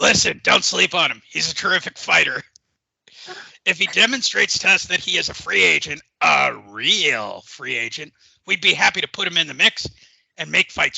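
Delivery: rough-edged, creaking put-on delivery. Answering about a fighter as Bob: Top Rank Bob impression. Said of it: "Let's see exactly what Bob has to say".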